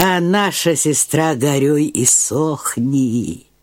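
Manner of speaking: ordinary delivery, nothing marked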